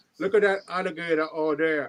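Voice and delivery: talking with mouth hanging open. Imitating a show's star who talks with his mouth open. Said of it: "talks with his mouth open all the time".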